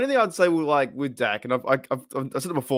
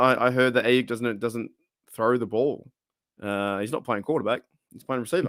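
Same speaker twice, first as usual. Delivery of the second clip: normal talking voice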